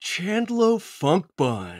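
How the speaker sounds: put-on laid-back bro voice. Saying a character's name after being asked: Chandlo Funkbun voice. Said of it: "you gotta say that in his voice".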